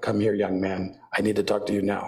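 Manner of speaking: flat, level, even monotone with anger. Acting out a dad getting mad at a kid: flat monotone voice, imitating dad. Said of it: "His face would go flat and he would go".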